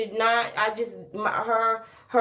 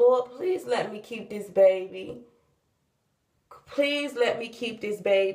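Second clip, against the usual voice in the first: mock desperate, begging pleading. Retelling begging and praying to the lord: imitating own begging prayer. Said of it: "me begging and praying".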